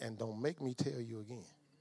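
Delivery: very quiet, hushed, firm, low-key authority. Retelling grandma's warning to show authority without volume: imitating grandma's quiet authority. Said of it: "that tone of voice".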